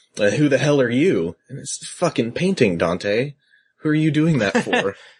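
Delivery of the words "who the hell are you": insulting, sarcastic, snarky and mouthy tone. Retelling a game character talking to a painting: snarky Dante impression. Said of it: "he looks at it and he's like".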